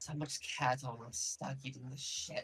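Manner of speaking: half-whispered, breathy, hushed grumbling mutter. Voicing a vampire who looks around and mutters: muttering in character. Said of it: "she just kinda mutters".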